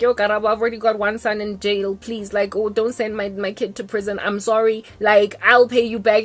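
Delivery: plain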